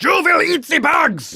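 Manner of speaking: put-on shrill, booming, yelled German villain accent. Quoting Alex Jones as a show's next topic, in his Klaus Schwab slash Hitler accent. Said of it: "In his Klaus Schwab slash Hitler accent".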